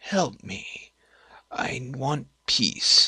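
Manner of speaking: slow, quiet, soft voice. Voicing a fading shade asking the players for help: slow and quiet voice. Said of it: "His voice is slow and quiet".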